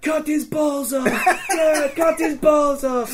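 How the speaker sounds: mock, very high, drawn-out rallying shout. Retelling an angry mob catching the Butcher, retelling a yell. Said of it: "And we're yelling".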